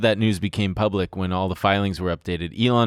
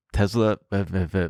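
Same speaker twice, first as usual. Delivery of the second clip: put-on speech with top teeth on bottom lip. Showing how someone speaks with top teeth on bottom lip: imitating top teeth on bottom lip. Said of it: "He touches his top teeth to his bottom lip like this".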